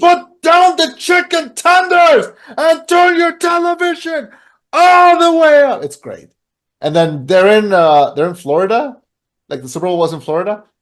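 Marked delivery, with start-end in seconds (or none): 0.0-5.8 very high, slow, loud, big onstage shout. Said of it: "And it's like".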